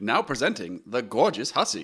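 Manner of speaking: put-on old-time 1940s radio announcer delivery. Asked to announce in a nineteen-forties radio style: 1940s radio presenter voice. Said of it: "can you say this in a nineteen forties radio voice?".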